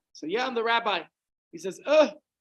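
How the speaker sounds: ordinary talk, nothing marked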